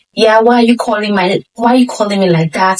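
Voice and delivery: ordinary talk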